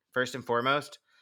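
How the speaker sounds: usual speaking voice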